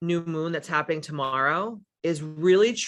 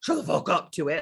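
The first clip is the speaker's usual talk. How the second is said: mock-aggressive, fierce put-on tone. Speaker acts out answering the doubting voice in her head, mock-aggressive retort. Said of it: "I have to like get kind of like crunk with that voice".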